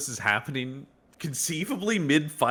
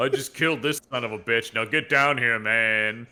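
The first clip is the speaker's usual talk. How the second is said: put-on angry voice, lower; 3 semitones lower than usual. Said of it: "we knew he was somebody's dad with this energy".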